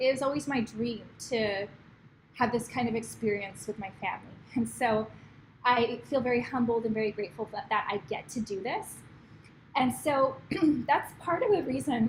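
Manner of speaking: emotional voice, cracking and breaking. Talking about family time and stepping back from work, voice cracking with emotion. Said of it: "I don't know why my voice is cracking up".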